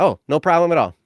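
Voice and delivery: mock matter-of-fact, calm and easygoing. Telling how they defused a confrontation, repeating their own reply: retelling a calm reply. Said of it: "I said it like that".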